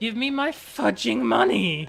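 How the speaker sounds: deliberate, creaky voice crack. Demanding the stolen money back, with a deliberate voice crack. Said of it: "Insert voice crack. I did that on purpose".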